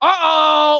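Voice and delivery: put-on pitiful, high, drawn-out little cry. Mocking a forty-five-year-old who says uh-oh: mocking a pathetic uh-oh. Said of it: "it's so pathetic".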